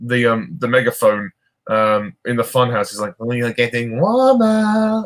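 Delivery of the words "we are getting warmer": very high, chilling, slow henchman drawl. Quoting a film henchman over a funhouse megaphone, creepy henchman voice. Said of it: "he's got a very creepy voice".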